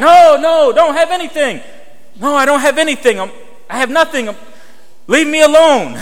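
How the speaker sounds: re-enacted shouting. Retelling answering a friend's father across the street, yelling back. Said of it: "And I'm yelling back".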